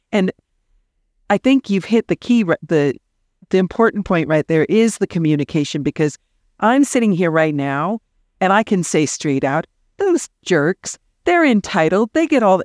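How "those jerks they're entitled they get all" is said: fake sarcastic complaining rant, higher pitch. Acting out a complaint about other people as a joke: put-on sarcastic rant. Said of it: "this is me being sarcastic".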